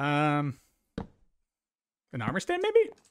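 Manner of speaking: voice cracking partway through "maybe". While building, unsure what goes here: voice cracking. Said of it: "Sorry about my voice crack there".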